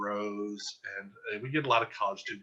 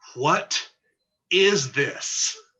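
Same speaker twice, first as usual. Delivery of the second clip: full-voiced, very loud, high, baffled tone; 6 semitones higher, 11 dB louder than usual. Recalling a woman behind them in a quiet theater, imitating a full-voice question. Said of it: "in full voice, this woman says with this exact intonation".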